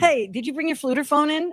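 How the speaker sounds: put-on Jersey accent. Joking with a co-host about accents, speaking in a new jersey accent. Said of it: "say flutophone with a New Jersey accent".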